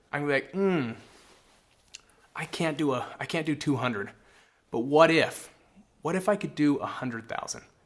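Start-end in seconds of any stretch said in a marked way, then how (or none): 6.0-7.6 tentative, exploratory, feeling-out, open-ended delivery. Demonstrating a lower number put forward as a tentative, open offer. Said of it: "Notice that I don't sound definitive".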